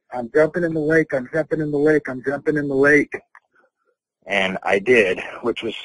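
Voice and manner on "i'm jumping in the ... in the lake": loud shouting, yelled. Retelling what they yelled at a friend: retelling own yell. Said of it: "I yelled at my friend that".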